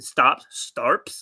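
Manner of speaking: put-on Rhode Island accent, word "stops" said as "starps".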